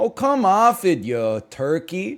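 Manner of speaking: put-on Canadian accent. Describing how many people at the speaker's high school sound: canadian accent. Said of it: "sound a little bit like".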